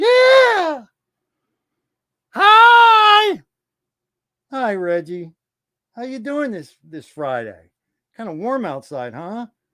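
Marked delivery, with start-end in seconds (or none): 0.0-3.4 loud, high puppet voice with drawn-out hi. Voicing the ventriloquist's puppet saying hi to everybody: ventriloquist puppet Reggie voice. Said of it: "Do you wanna say hi to everybody?".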